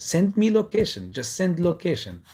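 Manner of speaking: loud fighter's voice with big swooping swings. Asking for a location the way a named figure says it, Khabib Nurmagomedov voice. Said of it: "I'm gonna say it like Habib Norma Nurmagomedov uh, says it".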